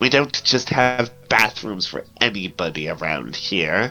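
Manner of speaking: contemptuous, sneering voice. Describing asking the front-desk lady for a bathroom, mock-sneering. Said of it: "sneers at you. She's like".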